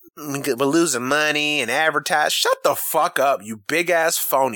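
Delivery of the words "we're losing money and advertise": put-on country accent. Mimicking Jerry Jones mid-rant to listeners, in a country-voice Jerry Jones impression. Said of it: "I'm just using the country voice".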